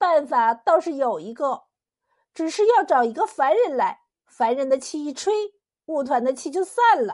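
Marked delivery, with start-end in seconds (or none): none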